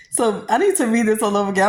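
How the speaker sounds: talking through laughter. Rereading a funny message aloud, laughing while talking. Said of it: "I'm sorry if I keep laughing".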